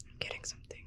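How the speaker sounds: hushed voice. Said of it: "I feel like I have to whisper".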